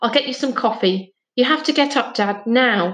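plain reading voice

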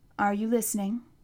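ordinary delivery

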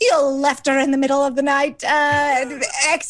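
put-on slipping into a Scottish accent.

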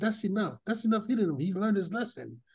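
ordinary delivery

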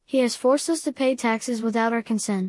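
ordinary delivery

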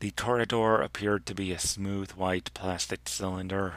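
ordinary delivery, nothing marked

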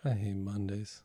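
slow, uncaring cartoon-cat voice. Showing how to talk like Garfield, slow uncaring Garfield voice. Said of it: "just kind of talk like this".

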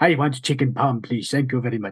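put-on Indian accent. Answering his wife about dinner, slipping into a put-on indian accent. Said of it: "I think my brain just auto does it".

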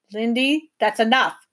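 curt, sharp-toned. Reading a professor reining in a rude girl: sharp. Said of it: "said the professor sharply".

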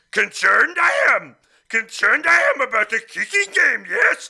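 creature voice pitched way up and very loud. Reading a viewer's question aloud on the show, in Yoda voice. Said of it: "In his best Yoda voice".

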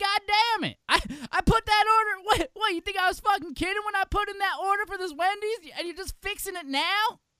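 put-on very loud, high, whiny Southern accent. Complaining about a Wendy's order: whiny Jim Cornette Southern accent. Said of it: "it's a little more whiny".

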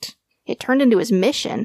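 plain

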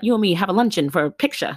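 put-on old-fashioned showbiz patter, old-timey English style. Imagining an agent who speaks in old-timey English; old-timey English speech. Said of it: "speaks in old timey English".

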